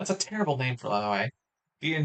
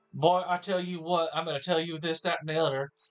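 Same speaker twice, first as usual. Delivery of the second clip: weird, exaggerated put-on Southern American accent; 3 semitones higher than usual. Demonstrating the accent they always end up using: weird southern accent. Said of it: "they end up being weird Southern accents, which is like".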